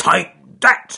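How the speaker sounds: very loud, gruff, rough, high-pitched bellowing shout. Narrator reading a bear character hitting a fox, shouted. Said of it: "Charles Growly Bear shouted".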